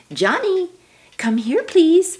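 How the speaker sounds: friendly, pleasant upward lilt, pitched very high. Showing how to call johnny pleasantly instead of angrily, pleasant rising voice. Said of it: "See how your voice went up?".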